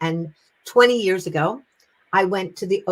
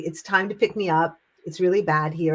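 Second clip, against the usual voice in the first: normal talking voice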